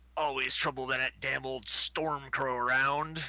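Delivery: rough, gruff, rustic backwoods country voice. A game master voices a newly introduced character as he introduces himself: gruff country voice. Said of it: "this really gruff kind of country voice comes out".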